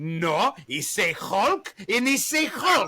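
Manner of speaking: put-on Greek accent. Retelling what his mom said about a childhood gift, imitating his greek mom's accent. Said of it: "I love your Greek mom voice".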